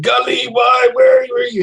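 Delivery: acted, desperate screaming. Playing a character delirious with grief, screaming for Gully: screaming in character. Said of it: "screaming, like".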